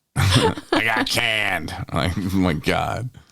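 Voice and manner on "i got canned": high voice, like a punch to the throat. Act out how his voice gave him away, imitating a punched-in-the-throat voice. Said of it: "his voice was so like, ah, somebody just punched me in my throat".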